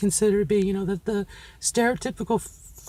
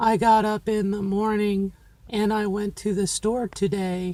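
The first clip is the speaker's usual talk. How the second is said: flat, droning, unvaried monotone at a level pitch. Demonstrating a speech pattern with an everyday sample sentence, flat monotone delivery. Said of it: "kind of the male pattern, you know, flat, um, monotone".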